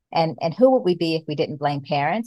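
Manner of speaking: ordinary talk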